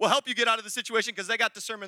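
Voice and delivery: rapid, rushed, preaching delivery. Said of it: "I'm talking really fast".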